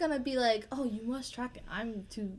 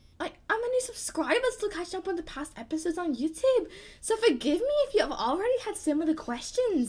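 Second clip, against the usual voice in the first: put-on Scottish accent, pitched up; 8 semitones higher, 4 dB louder than usual. Reading out a question to the judge on request, in a Scottish accent. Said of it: "hear you do the most authentic Scottish accent".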